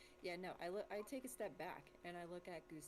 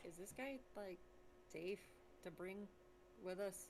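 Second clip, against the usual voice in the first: plain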